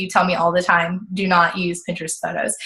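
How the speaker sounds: ordinary talk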